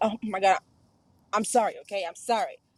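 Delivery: fake, throwaway, impatient, insincere tone. Showing how an unmeant apology sounds, as an insincere apology. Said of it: "That's not sincere".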